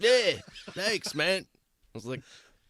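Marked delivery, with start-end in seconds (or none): 0.0-1.4 fake, lilting European accent, pitched up. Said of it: "fake European accent".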